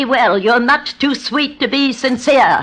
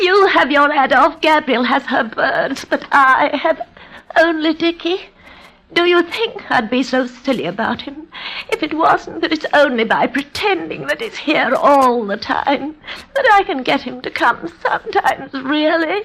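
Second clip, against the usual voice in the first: tearful, crying voice, speaking through tears. A woman, told to stop crying, explains herself to the others, tearful. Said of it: "now she's in tears".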